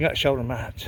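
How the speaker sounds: ordinary talk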